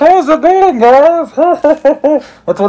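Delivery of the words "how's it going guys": very high, muffled villain voice as if through a mask. Joking with co-hosts that wearing masks would make them sound like this: Bane voice. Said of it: "It would sound like Bane from The Dark Knight Rises".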